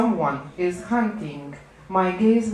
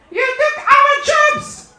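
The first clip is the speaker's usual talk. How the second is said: high, loud crowd-style yell. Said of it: "crowds shouting and yelling".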